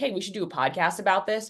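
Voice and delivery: ordinary talk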